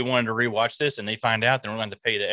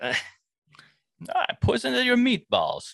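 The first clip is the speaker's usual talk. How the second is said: shrill, high, swooping, over-the-top fake Italian villain accent; 13 semitones higher than usual. Teased for a wrong accent, speaker plays along in a really bad italian villain accent. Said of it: "you sound like a really shitty Italian villain".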